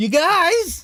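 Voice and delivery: very high, shrill yell with "guys" stretched long. Reacting to callers on a phone-in, yelling. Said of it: "Sorry, I yelled that".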